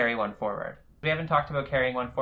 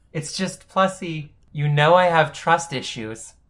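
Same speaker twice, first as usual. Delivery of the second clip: very loud, quavering, wavering, fake-weepy voice; 4 semitones higher, 8 dB louder than usual. A boyfriend who was just shut down answers, wavering voice. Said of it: "And his voice wavers".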